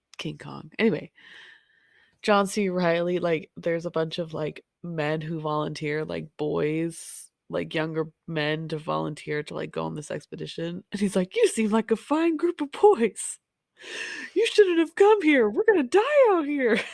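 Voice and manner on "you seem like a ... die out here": put-on cheerful delivery, higher and louder. Retelling a movie scene where a man greets volunteers: imitating John C. Reilly, happily cheerful. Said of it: "really happy about it".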